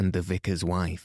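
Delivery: plain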